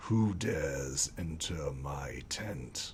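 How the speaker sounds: very low, very quiet, hushed deep voice. A unicorn challenges the visitors entering its tent: deep voice. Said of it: "in this deep voice".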